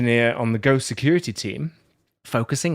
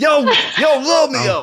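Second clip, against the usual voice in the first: put-on Brooklyn accent, much higher, louder; 12 semitones higher, 6 dB louder than usual. Joking about how Shakespeare would sound, in a Brooklyn accent. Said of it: "it's Brooklyn".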